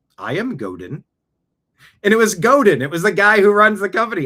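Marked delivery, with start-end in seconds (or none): 0.2-1.0 put-on vague Swedish accent. The man in the elevator, who runs the company, says who he is: Godin impression, maybe-Swedish accent. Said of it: "I don't know if he's Swedish or what accent it was".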